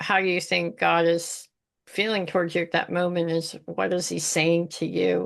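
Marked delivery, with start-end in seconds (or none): none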